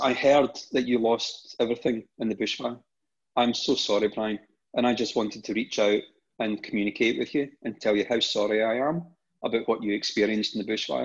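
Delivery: ordinary delivery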